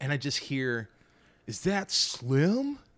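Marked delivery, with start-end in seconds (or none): 1.5-2.8 put-on high young man's call-out, one word drawn out. Retelling hearing a young man call out: imitating a young man calling out. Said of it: "Flawless impression".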